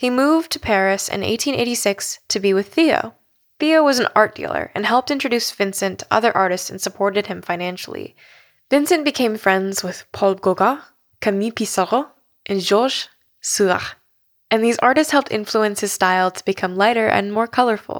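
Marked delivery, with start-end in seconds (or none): 8.7-13.9 horrible, bad French accent and pronunciation. Listing the French artists who were friends: horrible French accent. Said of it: "Apologies for my horrible French accent".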